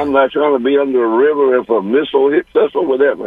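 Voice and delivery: ordinary talk, nothing marked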